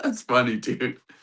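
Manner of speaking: laughing through the words. Retelling own reply to a friend's naming news: retelling own laughing reply.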